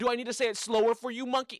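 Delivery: loud, high, fast taunting.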